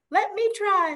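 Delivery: very high, tiny, squeaky little voice. Narrating a story as an unseen voice speaks to the animals, little squeaky voice. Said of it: "this little squeaky voice".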